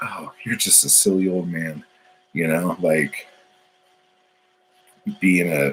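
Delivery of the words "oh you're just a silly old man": ordinary talk, nothing marked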